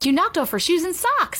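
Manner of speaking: sudden, high, excited exclaiming outcry. Racing up the stairs, right after a collision with a girl, exclaiming. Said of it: "exclaimed Dee".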